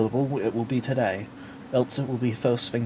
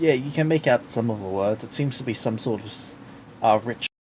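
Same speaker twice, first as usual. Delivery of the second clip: ordinary talk, nothing marked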